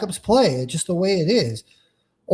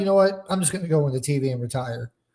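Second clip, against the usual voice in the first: normal talking voice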